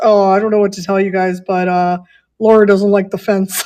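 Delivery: put-on shy, mumbled delivery. Retelling how a woman's husband spoke at Adam's parents' house, imitating a shy mumble. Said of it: "he was like mumbling it".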